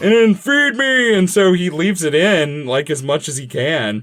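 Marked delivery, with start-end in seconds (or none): 0.3-1.1 man-eating monster-plant voice, pitched way up. Acting out the hungry plant demanding food: Little Shop of Horrors plant voice. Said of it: "the plant where he, like, it's like".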